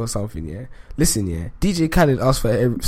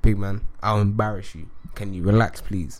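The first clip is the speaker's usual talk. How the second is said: ordinary talk, nothing marked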